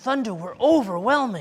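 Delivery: ordinary delivery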